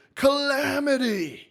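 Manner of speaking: very high, big announcer-style call on the word. Retelling a great call, saying one word in Kevin Harlan voice. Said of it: "in his Kevin Harlan voice".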